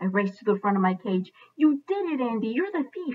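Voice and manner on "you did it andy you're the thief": tiny, high, squeaking hamster-like rodent voice. Humphrey calls out to Andy from the front of his cage; squeaky Humphrey voice. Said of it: "I squeaked".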